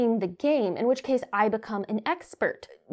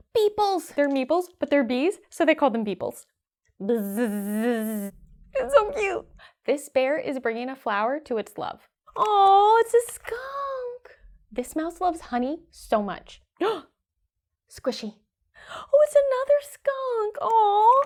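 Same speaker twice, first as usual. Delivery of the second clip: put-on dramatic play-by-play, high, swooping, drawn-out; 5 semitones higher than usual. Replaying own earlier game session as a dramatic reenactment of own past reactions. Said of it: "I'm gonna do a dramatic reenactment for you".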